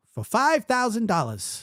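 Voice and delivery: put-on very high-pitched New York accent. Retelling how a game show host read prize amounts: imitating Regis Philbin's New York accent. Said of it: "He had that, like, New York accent".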